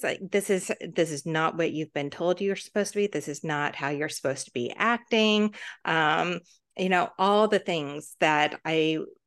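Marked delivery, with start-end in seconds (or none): none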